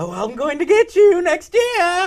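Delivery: high, loud, taunting comic-book villain voice. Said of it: "he plays it like he's the Joker or the Riddler".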